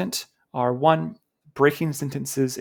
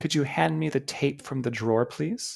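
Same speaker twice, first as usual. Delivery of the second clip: rising questioning tune on please; 4 dB quieter than usual. Repeating a practice sentence, the speaker matches its rising questioning tone. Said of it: "I should match that questioning tone".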